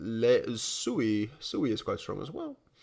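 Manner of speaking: soft, slow voice breaking mid-word. Speaker reading out incoming alerts to listeners, voice cracking. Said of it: "bit of a voice crack".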